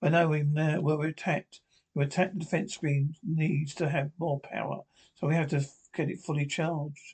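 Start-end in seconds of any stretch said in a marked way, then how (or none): none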